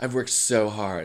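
put-on mimicked Southern accent. Retelling a video of a girl who says she lost her accent: imitating a southern accent. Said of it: "it still sounds like you have it".

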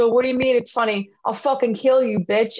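put-on angry tone. Retelling how a guy got in the speaker's face over a drawing, mock-angry threat. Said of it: "So he jumps in my face, goes".

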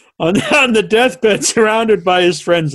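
laughing through reading. Reading a fan's question aloud: laughing while reading. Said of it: "now I'm laughing as I'm reading this".

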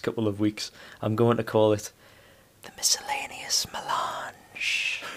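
quiet whisper. Announcing a segment title to the other speakers, whispering. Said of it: "make out that whisper".

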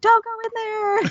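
pretend shouting. Acting out a viewer yelling warnings at a horror character: mock yelling at the screen. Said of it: "yelling at the screen".

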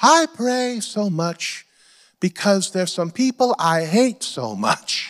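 put-on heavy Korean accent. Quoting Dr. Cho's answer on why he prays so much, do a Dr. Cho impression, heavy Korean accent. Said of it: "he spoke with a heavy Korean accent".

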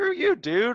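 mock annoyed tone. Speaker retells how the two of them reacted to a man's remark, mock-annoyed retort. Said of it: "you and I looked at each other kind of pissed".

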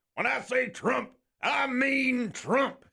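high-pitched cartoon cowboy voice. Read out a texter's message about Trump, in a Yosemite Sam voice. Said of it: "in the Yosemite Sam voice".

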